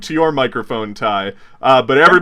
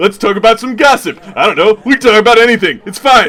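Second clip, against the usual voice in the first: high, loud, nervous host voice. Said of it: "He's like".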